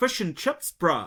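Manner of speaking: attempted New Zealand accent. Saying foreigners can't do the accent, a speaker tries an attempted kiwi accent. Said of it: "no one can do a Kiwi accent".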